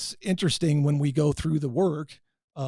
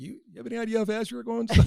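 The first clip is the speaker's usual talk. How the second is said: put-on laughing speech, higher; 7 semitones higher than usual. Retelling a traffic stop, quoting the cop: imitating a cop laughing while talking. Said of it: "he's just laughing".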